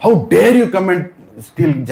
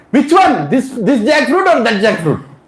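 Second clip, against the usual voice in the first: loud, high-pitched shout; 7 semitones higher than usual. Telling a story, the speaker acts out a man up a tree shouting down to Jagannath, retelling a loud shout. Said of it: "So he shouts loudly".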